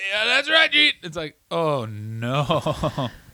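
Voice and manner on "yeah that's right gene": very high-pitched, scratchy, rasping, rough voice. Imitating them in a promo with Gene Okerlund, imitating a scratchy hungover voice. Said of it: "They have scratchy voices like".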